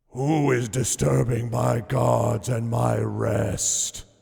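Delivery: loud, booming, rough, rasping reptile hiss. Narrating a scene, voicing the creature at the pools in a loud hissing voice. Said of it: "booms a loud, hissing voice".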